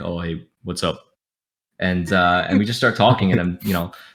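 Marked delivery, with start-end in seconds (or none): 0.0-1.0 put-on formal voice, much lower, quieter. Retelling greeting someone who came over to talk, in a deeper formal voice. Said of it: "I'm just talking like this".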